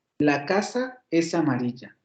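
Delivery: slow, with a break between casa and es amarilla. Showing how a classmate divided the sentence, pause after casa. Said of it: "yo puedo hacer una pausa entonativa ahí".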